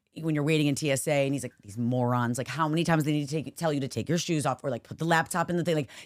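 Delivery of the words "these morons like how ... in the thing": ordinary talk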